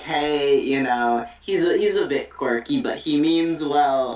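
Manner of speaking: ordinary talk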